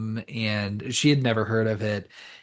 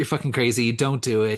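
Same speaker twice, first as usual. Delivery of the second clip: put-on angry man voice. Describing a film, the speaker acts out Max's reaction; imitating Max getting aggressive. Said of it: "He does get real, a little aggressive with her".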